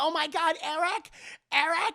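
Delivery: very high, desperate, drawn-out calling scream. Recounting a scene where a character calls for a missing kid, retelling a scream. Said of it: "start like screaming at the trees".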